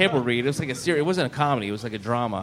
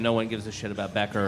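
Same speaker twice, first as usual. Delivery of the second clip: usual speaking voice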